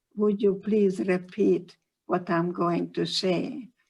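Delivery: ordinary delivery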